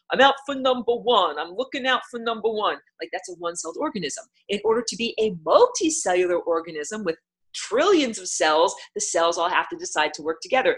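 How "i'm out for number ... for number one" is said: jokey, put-on little tough-guy accent. Joking about a one-celled organism, in a tough guy accent. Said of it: "I joke with my little tough, tough guy accent".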